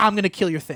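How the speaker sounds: ordinary talk, nothing marked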